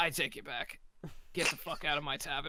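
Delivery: rough, gruff voice. Voicing the old man who runs the tavern, in a gruff voice. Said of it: "you hear kind of a gruff voice".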